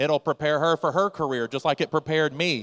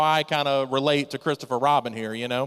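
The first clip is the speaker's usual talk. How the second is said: usual speaking voice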